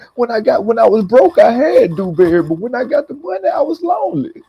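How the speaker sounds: put-on crying voice. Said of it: "that boy was crying like a motherfucker".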